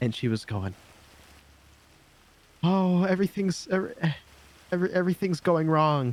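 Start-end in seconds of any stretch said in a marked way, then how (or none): 2.6-6.1 put-on blubbering, sobbing, broken-up crying voice. Acting out the police chief sitting on the lobby floor: imitating someone crying. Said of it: "essentially crying".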